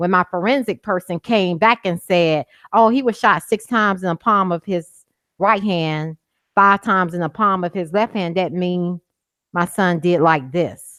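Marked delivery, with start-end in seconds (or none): none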